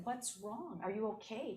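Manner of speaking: concerned tone in put-on French accent. Retelling two women asking what's wrong: imitating a French accent. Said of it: "In their beautiful French accent".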